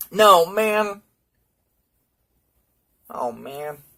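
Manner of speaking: high, loud, choked-up voice, holding back tears. About to tell what happened, the speaker is trying not to cry. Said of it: "I'm trying not to cry now".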